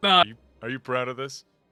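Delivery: very loud, disappointed, let-down voice. Imitating another player's question in a disappointed dad voice. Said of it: "Why do you sound like a disappointed dad?".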